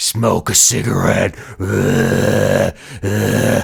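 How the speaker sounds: very slow, croaking, creaky, demented evil voice. Voicing the voice in the head during addiction: imitating an evil demented voice. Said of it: "this evil, demented voice that's like".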